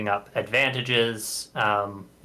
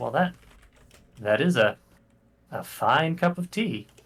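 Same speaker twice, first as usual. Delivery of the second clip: amused, much higher pitch; 4 semitones higher than usual. Narrator voicing a tea-sipping figure addressing the four of you, slightly amused. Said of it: "he takes a sip of the tea and he says".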